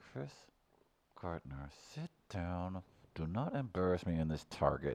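put-on voice spoken through teeth. Describing how moms scold their kids in public: imitating a mom talking through teeth. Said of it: "talking to their children through their teeth".

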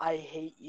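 very soft, hushed half-whisper under the breath. Retelling how someone half-whispered under his breath: imitating a half-whisper under the breath. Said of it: "he whispers under his breath".

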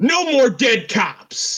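mock very high, very slow, furious drawn-out yell. Describing a film scene where a cop yells at Harvey Dent: imitating an angry cop's yell. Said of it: "gets really angry out of nowhere and yells".

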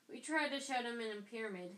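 ordinary talk

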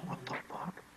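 very soft whisper sounding shocked. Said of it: "and I'm like".

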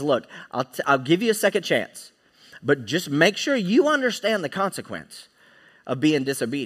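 ordinary talk, nothing marked

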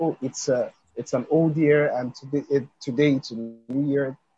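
plain

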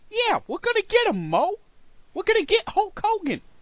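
very high, loud, goofy-angry character voice. Imitating Kevin Sullivan plotting against Hulk Hogan: Kevin Sullivan as angry Curly. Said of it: "He sounds like Curly from the Three Stooges, but just angry".

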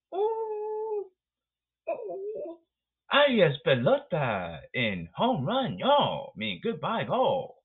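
very high, stretched-out monkey ooh hoots. Mocking a batter who sees a middle pitch, imitating a monkey. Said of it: "Like a monkey, go".

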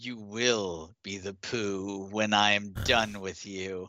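low guttural snarl from the throat, monster-like. A game master voices a hobgoblin snarling at the players, guttural hobgoblin snarl. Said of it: "The hobgoblin snarls gutturally at you".

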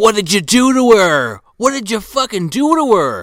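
high, loud, frantic yelling.

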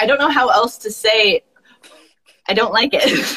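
plain

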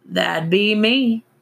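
muffled and high, speaking around a dangling cigarette. Narrator reads the owner answering Xander's question, muffled by cigarette in mouth. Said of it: "his voice was muffled by the cigarette hanging out the side of his mouth".

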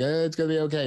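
very high, anxious, nervous comforting tone. Acting out reassuring a scared child: nervously reassuring a child. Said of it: "I'm kind of nervously being like".

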